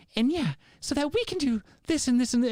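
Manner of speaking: very high, phony, earnest fake emoting. Mocking people talking earnestly on a microphone: imitating fake emoting. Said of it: "this fake emoting".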